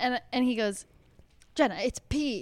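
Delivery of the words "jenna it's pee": put-on stressed-out man's tone. Recounting waking in a wet bed and quoting him, imitating a stressed-out man. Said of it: "He's like all stressed out".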